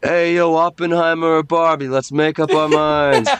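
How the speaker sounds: put-on mocking jeer. Retelling heckling a player in pink cleats at a soccer game: imitating heckling a player. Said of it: "I was like".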